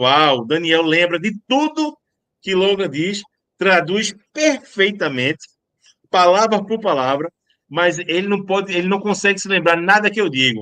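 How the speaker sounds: plain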